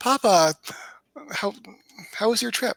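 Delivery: superficially friendly tone. Playing a character greeting her father after his trip, acting super friendly. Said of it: "act like we're super friendly".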